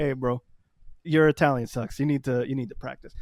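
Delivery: normal talking voice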